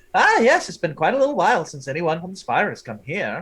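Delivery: animated, little, sing-song gnome voice. Voicing a little gnome who leads the group through a workshop: voicing a little gnome. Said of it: "the little gnome just keeps walking".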